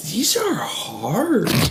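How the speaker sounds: earnest, high voice, "hard" stretched out long. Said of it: "so earnestly".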